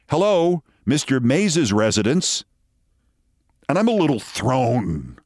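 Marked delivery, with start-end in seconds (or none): 0.1-2.4 gravelly, feminine voice. Retelling how a phone was answered: Hattie McDaniel impression. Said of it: "a gravelly but feminine voice that sounded exactly like Hattie McDaniel says".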